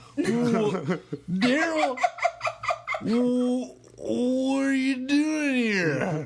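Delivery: put-on voice, very high pitched and slow. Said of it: "the Californians was a s-, S N L skit".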